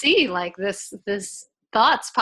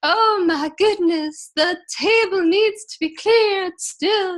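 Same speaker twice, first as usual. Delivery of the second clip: silly crazy voice, very high, drawn out; 9 semitones higher, 4 dB louder than usual. Showing how to tell the kids something in a silly way: crazy voice. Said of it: "I'll say whatever in a crazy voice".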